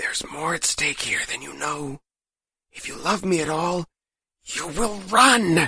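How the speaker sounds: high-pitched voice, words hissed out. Mama, barely able to talk, tells Azure she must go: hissed. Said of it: "she hissed".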